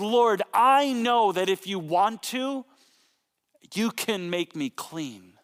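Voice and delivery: put-on sincere, pleading tone. Retelling a leper's words at Jesus' feet: acting out speaking with conviction. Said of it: "says with this conviction in his voice".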